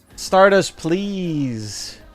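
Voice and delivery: pleading. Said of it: "I'm pleading".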